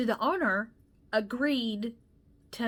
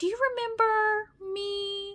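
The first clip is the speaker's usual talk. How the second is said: put-on, very high, bubbly, chipper cheerful voice; 7 semitones higher, 4 dB louder than usual. Recounting a phone call from a former coworker, acting out her asking whether he remembers her, in a chipper voice. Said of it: "she had a very chipper voice".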